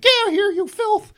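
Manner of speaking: very high, shrill, loud put-on voice. Voicing Charlie's mom turning a visitor away at the door: put-on voice for Charlie's mom. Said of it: "those are the voices I've, I've chosen for this scene".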